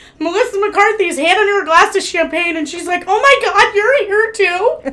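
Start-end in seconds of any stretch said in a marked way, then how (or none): 3.1-4.8 mock stunned, high, slow, drawn-out amazement. Retelling how she turns and is handed a glass of champagne, acting out someone in shock. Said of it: "in shock".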